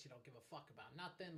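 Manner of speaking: put-on New York accent. Imitating mom, who is from new york: imitating mom's new york accent. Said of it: "my mom's from New York. She talks like this".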